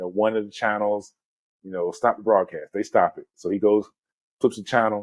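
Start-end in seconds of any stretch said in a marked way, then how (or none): none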